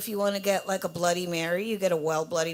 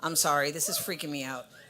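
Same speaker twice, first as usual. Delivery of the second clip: plain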